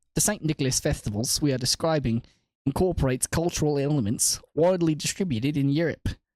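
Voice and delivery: put-on British accent, reading aloud. Reading a passage aloud after announcing the accent, in a british accent. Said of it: "I'm gonna speak in a uh, British accent".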